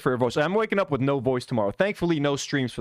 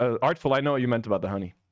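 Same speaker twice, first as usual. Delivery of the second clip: usual speaking voice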